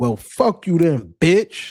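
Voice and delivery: California gangster-movie style, dismissive, scornful tone. Retelling what a man said to a woman who ignored him: imitating a Cali-style insult. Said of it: "the most Cali shit".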